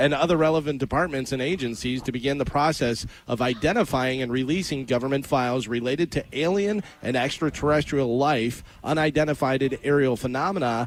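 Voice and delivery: ordinary delivery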